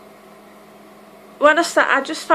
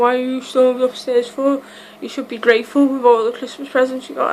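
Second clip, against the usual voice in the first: normal talking voice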